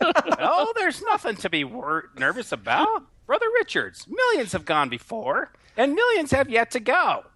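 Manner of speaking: put-on matronly puppet voice. Reading a scripted line as a matron greeting Brother Richards: matronly Muppet voice. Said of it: "It sounds like the matronly Muppet".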